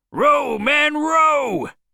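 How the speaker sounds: very high, wild shouted cry. Ahab calls out to his men in the boat; crying out wildly. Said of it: "cried Ahab wildly".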